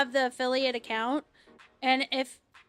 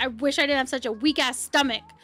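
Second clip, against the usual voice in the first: put-on angry, annoyed, complaining tone. Retelling how a friend complained about his weak stomach: imitating Snide pissed off. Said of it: "getting really pissed off 'cause he was like".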